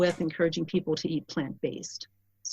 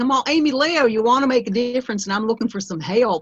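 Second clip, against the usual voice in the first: put-on loud, high woman's voice with strong Southern accent; 5 semitones higher, 6 dB louder than usual. Retelling what a woman from a class asked: strong southern accent. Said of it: "literally, it sounded like that".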